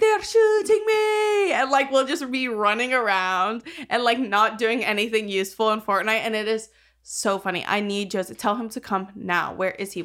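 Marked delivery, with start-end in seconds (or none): 0.0-1.5 annoying, fake, very high put-on Irish accent. Imitating how he talks while they play Fortnite, annoying fake Irish accent. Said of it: "his impersonation of an Irish accent".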